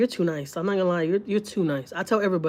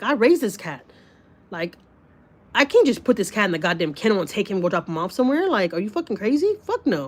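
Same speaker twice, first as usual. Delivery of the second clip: plain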